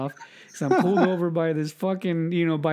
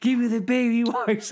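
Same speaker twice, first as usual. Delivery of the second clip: re-enacted yelling, higher pitch; 6 semitones higher than usual. Retelling an embarrassing moment, the speaker calls to someone in the car, retelling a yell. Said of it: "And so I'm yelling at Mrs".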